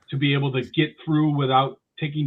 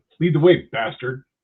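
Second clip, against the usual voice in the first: loud, scornful, mocking, derisive sneer; 5 dB louder than usual. Playing a scene and addressing someone as bastard: mocking, derisive tone. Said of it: "I'm going to say it with a derision".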